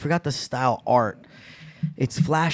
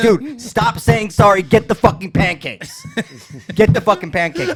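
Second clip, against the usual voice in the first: put-on very high, swooping, exasperated, fed-up outburst; 10 semitones higher, 7 dB louder than usual. Retelling someone losing it over endless apologies while getting pancakes: imitating Mister Gray losing it. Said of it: "Mister Gray finally lost his fucking mind".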